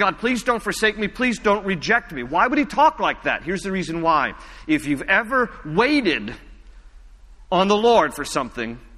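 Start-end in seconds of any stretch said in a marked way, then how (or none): 0.0-2.2 mock, acted pleading tone. Retelling what he said to God; acting out pleading. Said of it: "And he's pleading".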